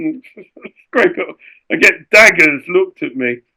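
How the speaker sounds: usual speaking voice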